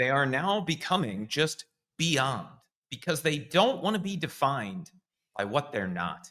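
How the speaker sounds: thick, dripping, heavy sarcasm. Reporting a company's name change to another speaker, with heavy sarcasm. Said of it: "You may sense the heavy sarcasm in my voice".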